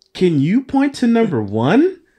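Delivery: very high, slow, loud cartoon-host voice. Asking the others a question as a Dora bit: Dora voice. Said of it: "let me do a Dora thing".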